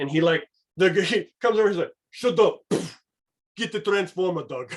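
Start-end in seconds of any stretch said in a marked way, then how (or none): 2.1-4.7 put-on Austrian-accented action-hero voice. Describing Doug's inner devil urging him to get the Transformer, Arnold Schwarzenegger voice. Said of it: "my devil's like Arnold Schwarzenegger".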